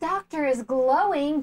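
high, slow, gasping, gushing admiration.

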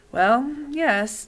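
weary, worn-out voice, a little high. Narrator reads the doctor's reply during a quarrel: weary voice. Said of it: "said the doctor in a weary voice".

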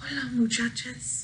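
barely-there, very soft, hushed voice. Reading a story aloud, the kitty boy greets everyone in a very soft voice. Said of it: "he said in a muy, muy soft voice".

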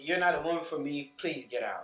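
soft, low, very nice, polite, courteous voice. Showing how he would turn down a woman, in a very nice tone. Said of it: "in a very nice tone voice".

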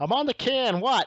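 put-on high, loud voice with Minnesota accent. Retelling a man calling back from the toilet: imitating Kurt's Robbinsdale accent. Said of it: "That Robbinsdale accent".

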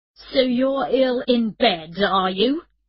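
furious, loud, angry headteacher voice. Narrator reading Phil's phone call to Emma, in a loud angry headteacher voice. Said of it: "he said in his special, loud, angry headteacher's voice".

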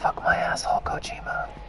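hushed whisper, barely voiced, close to the mic.

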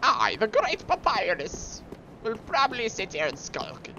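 high voice pushed from the back of the throat. Comparing character voices, the speaker slips into: Papyrus voice. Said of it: "my papyrus voice".

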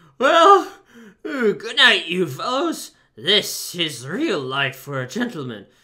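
drowsy, sleep-heavy, high and very loud. The toad, kicking out his legs in his bunk, bids his fellows goodnight, sleepy. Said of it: "sleepily said".

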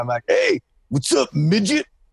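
playful, ribbing, high, swooping, bouncy put-on voice. Retelling calling out to get someone's attention: imitating Bam's voice. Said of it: "I said to him in his voice".

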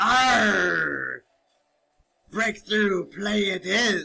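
put-on pirate voice with drawn-out "arr". Playing a football game while staying in character: put-on pirate voice. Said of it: "out of character".

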